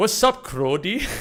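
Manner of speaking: put-on Toronto street-slang accent. Retelling how a guy suddenly started talking, in a Toronto slang accent. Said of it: "starts talking in like Toronto slang".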